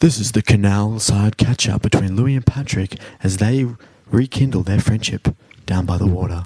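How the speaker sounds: smooth broadcast voice. Speaker demonstrates a catch-up segment intro, in a good radio voice. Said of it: "with like a good radio voice".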